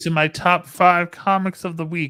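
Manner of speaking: high, loud cartoon frog puppet voice. Host starts the next segment, doing a Kermit the Frog voice. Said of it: "I just did a Kermit the Frog voice there".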